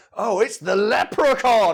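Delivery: put-on loud, slow voice muddling Scottish and Irish accents. Imitating a film line to mock it as the same voice: Shrek voice. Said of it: "that's Shrek voice".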